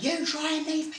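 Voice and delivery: put-on, very high, furious shrieking scream. Recounting getting into the car as a man screamed at the speaker, retelling his screaming. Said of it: "he's screaming at me".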